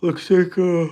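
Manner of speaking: words stretched by a yawn. Checking stock prices late at night while tired, talking through a yawn. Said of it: "sorry, I'm yawning".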